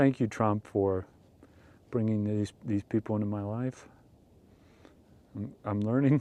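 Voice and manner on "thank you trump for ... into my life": ironic, insincere, sarcastic grateful tone. Thanking Trump as a joke, flagged as sarcasm: sarcastic mock thanks. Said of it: "This is sarcasm right here".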